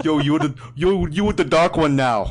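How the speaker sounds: loud party-bro beach-dude voice. Saying they should have done a Jersey Shore guy, then trying it: Jersey Shore guy voice. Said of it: "have done a Jersey Shore guy".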